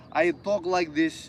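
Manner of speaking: bad Russian accent, drawn out slowly. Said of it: "not a very good Russian accent".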